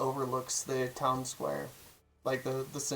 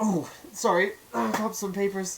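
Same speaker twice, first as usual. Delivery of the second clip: high-pitched, middle-aged halfling woman character voice; 7 semitones higher, 3 dB louder than usual. Game master voicing a halfling woman coming up from under her desk, halfling woman character voice. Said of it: "she's like".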